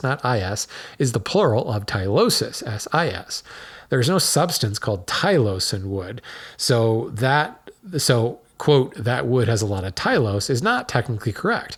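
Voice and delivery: ordinary talk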